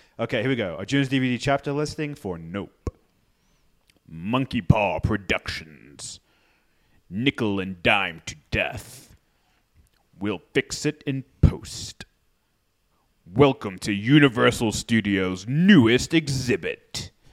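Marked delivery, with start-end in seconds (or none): 2.4-17.1 good, deep, low voice in deepest register. Reading a DVD chapter list as a navy recruitment ad: Keith David voice. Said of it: "you're going to do this in the voice of Keith David".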